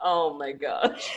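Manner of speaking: crying with laughter. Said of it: "I'm literally crying".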